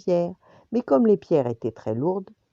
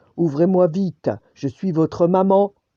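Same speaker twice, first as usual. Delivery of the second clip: loud, gruff, big-voiced wolf; 5 dB louder than usual. Narrating a fairy tale, the wolf knocks at the young goats' door: big gruff wolf voice. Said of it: "dit de sa grosse voix".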